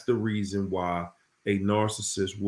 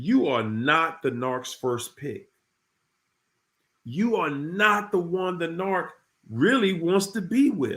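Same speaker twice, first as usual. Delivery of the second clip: slow, deliberate, pitched-up word-by-word delivery; 8 semitones higher than usual. Telling listeners to pay attention to this point, speaking slowly. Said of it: "I'm going to say this slow for you".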